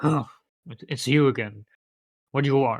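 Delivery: grumpy, surly, unwelcoming, menacing voice. Voicing the grumpy guy as the players approach him again: grumpy menacing guy voice. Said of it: "you approach the menacing guy again".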